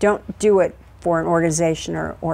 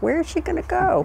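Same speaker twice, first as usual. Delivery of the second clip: very high, sidelong muttered aside, rising pitch; 12 semitones higher than usual. Retelling her husband meeting them at the airplane, retelling a mutter under his breath. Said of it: "under his breath, kind of goes".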